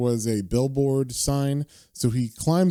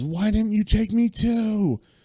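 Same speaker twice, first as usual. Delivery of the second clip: put-on, anguished, pitched-up shout of despair; 9 semitones higher than usual. Retelling a comic scene, a soldier crying out in despair: imitating someone yelling. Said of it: "And he yells".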